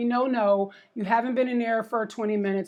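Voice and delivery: ordinary talk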